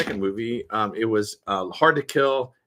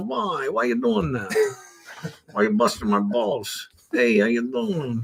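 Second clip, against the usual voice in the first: put-on sleazy New York wise guy, swooping pitch; 5 semitones higher than usual. Showing off a new character they're working on, sleazy New York guy voice. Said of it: "it's a new character I'm working on".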